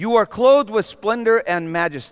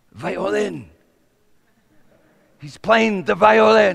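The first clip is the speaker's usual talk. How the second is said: stage whisper loud enough to carry. Telling a joke, voicing a waiter answering the diners: loud whisper. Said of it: "declared in a loud whisper".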